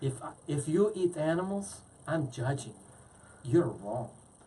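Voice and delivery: bad, horrible put-on Spanish accent. Quoting how a woman starts off her video, in a bad Spanish accent. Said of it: "that was a horrible Spanish accent".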